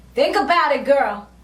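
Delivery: ordinary talk, nothing marked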